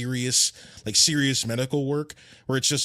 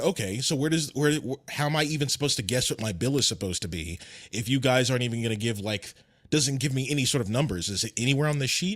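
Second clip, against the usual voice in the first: ordinary delivery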